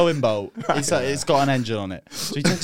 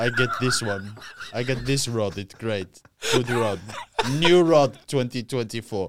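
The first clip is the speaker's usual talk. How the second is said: put-on broken English caricature voice; 3 semitones lower than usual. Describing his dad talking about fishing rods from magazines, imitating his dad's broken English. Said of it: "Your impression of your own dad".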